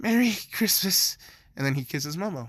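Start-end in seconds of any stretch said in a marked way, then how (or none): 0.0-1.2 acted heavy breathless panting, higher pitch. Acting out a character who stops under mistletoe: acted heavy panting. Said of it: "panting heavily".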